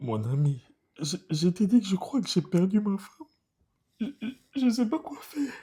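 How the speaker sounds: tearful, sobbing speech. In a skit, a husband speaking to his friend, crying while talking. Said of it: "tu es en train de pleurer là".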